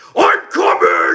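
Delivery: very deep, booming, huge thunderous yell. Act out how Jerry would yell at someone, imitating Jerry's deep, thunderous Viking yell. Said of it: "yell at you with the deep, most thunderous, Viking voice".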